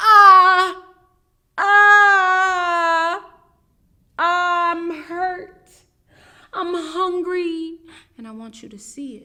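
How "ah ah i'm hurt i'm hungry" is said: very high, very loud, drawn-out crying wail. Demonstrating how to show upset to get someone to hug you: demo crying and screaming. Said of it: "I'm gonna cry a little bit, and I'm gonna scream".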